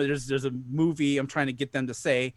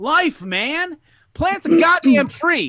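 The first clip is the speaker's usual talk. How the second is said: fake commercial announcer voice, higher and louder; 13 semitones higher, 9 dB louder than usual. Starting a joke ad by telling listeners to plant a tree: mock ad read. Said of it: "I gotta do an ad".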